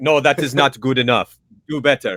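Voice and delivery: terrible put-on Russian accent. Voicing a scientist with a clipboard, in a terrible russian accent. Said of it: "my Russian accent's terrible".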